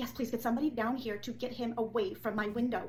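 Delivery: ordinary delivery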